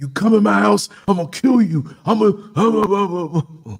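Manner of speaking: mock very high, unhinged, out-of-control screaming. Retelling chasing an intruder from the house: retelling a screamed threat. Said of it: "And I'm screaming".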